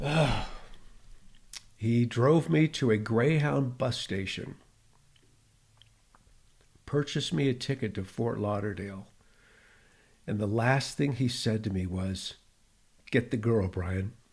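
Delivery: emotional, choked-up voice, catching in the throat. Recalling a man's kindness from years ago, getting choked up. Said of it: "you can hear my voice, I'm getting choked up".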